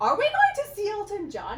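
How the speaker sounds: excited, disbelieving, high and loud squeal.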